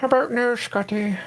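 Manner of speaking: put-on villain voice. Breaking off from talk about pip packages to do a Doctor Evil impersonation. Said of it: "That was my Doctor Evil impersonation".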